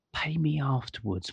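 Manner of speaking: hushed, soft stage whisper. Telling how the man at the table by the door spoke, retelling a half-whisper. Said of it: "he just whispered".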